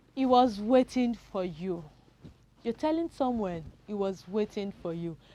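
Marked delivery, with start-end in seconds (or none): 0.2-1.9 falling intonation, slower. Teaching intonation, saying an example statement with falling intonation. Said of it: "your voice is going down".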